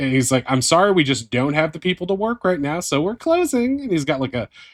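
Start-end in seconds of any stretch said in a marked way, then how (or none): 0.5-3.8 high, sing-song, cheerful and dismissive tone. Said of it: "a happy grin on his face".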